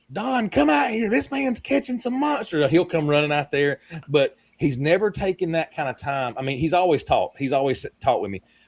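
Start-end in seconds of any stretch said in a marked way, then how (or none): 0.2-2.7 very high, hollered, calling-out voice. Retelling how a fisherman's wife called to him: imitating a wife hollering. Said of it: "I've had his wife holler".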